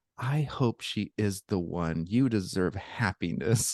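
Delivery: soft, slow, hushed stage half-whisper. Retelling what a girl said while hugging him: imitating a half-whisper. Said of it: "she just whispers in my ear".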